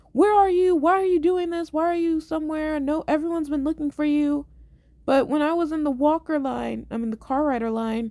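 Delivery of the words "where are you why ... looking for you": woman shouting, high-pitched yell. Retelling how a woman spotted the missing girl, imitating a woman yelling. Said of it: "she yells at her".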